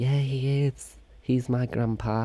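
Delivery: fake, put-on woman's voice. Acting out an imagined young woman's reply to a stranger, in a put-on woman voice. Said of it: "woman voice".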